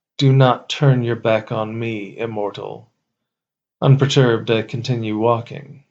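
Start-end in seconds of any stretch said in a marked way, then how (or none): 0.2-2.9 haughty, wrathful, enraged, commanding goddess voice. The narrator walks away and the goddess calls after them, angry goddess.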